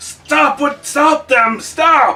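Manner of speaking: very high, dragged-out shrieking scream. Voicing the tree creature Balak as it bleeds: screaming. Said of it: "Balak is, like, screaming".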